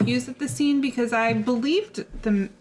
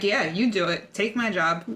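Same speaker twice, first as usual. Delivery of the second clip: usual speaking voice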